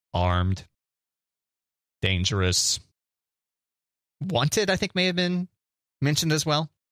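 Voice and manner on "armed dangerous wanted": mechanical, robotic announcer-style voice. Retelling a video where a cop hears a robot voice: robot voice. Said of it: "he hears like a robot voice going".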